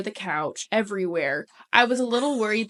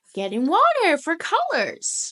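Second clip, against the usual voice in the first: put-on high, sing-song small child's voice; 8 semitones higher than usual. Retelling catching a kid at the fridge, the speaker imitates his little-kid voice. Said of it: "your imitation of his voice is so spot on".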